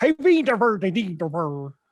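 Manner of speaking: put-on Swedish accent. Describing a Swedish film's US release, speaker shows how everybody talked, mock Swedish accent. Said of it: "everybody talked like this".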